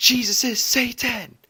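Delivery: put-on very high, shrill, loud screaming yell. Retelling how grandma ran down the street: imitating someone screaming.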